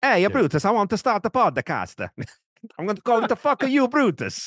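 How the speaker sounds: lousy fake Italian accent, very high, shrill and loud. Doing a bit on the podcast, speaker launches into a shitty put-on accent. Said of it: "I'm gonna do a shitty accent again here".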